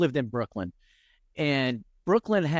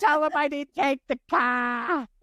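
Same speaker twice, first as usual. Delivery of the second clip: put-on child's scream, much higher, slower; 12 semitones higher than usual. Retelling an old episode of Cops to a listener, imitating a kid's scream. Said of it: "the kid screaming".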